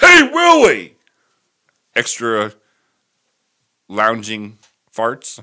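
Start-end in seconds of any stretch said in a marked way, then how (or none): 0.0-0.9 shrill, very high, very loud puppet-alien voice. Asked whether they do an ALF impression, the speaker answers with an ALF impression. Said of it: "That's almost as good as my Alf".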